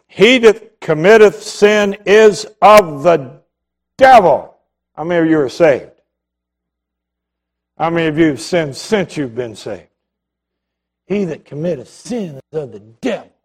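very slow, biting sarcasm. Reading Bible verses as if the devil were quoting them: sarcastic bite as the devil. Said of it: "read the verses of Scripture with a little sarcastic bite".

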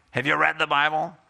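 snarky, snide, sarcastic tone. Advising how to ask someone about the Bible, showing the wrong way: snarky tone. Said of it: "I'm not encouraging you to be snarky here".

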